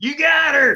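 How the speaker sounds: shouting in character voice. Calling out to Zayden in character during the game: yelling. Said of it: "I'm gonna yell".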